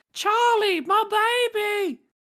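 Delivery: put-on very high-pitched, loud Australian accent. Showing off the one specific australian accent the speaker can do, specific australian accent. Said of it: "I could do one good Australian uh, uh, accent".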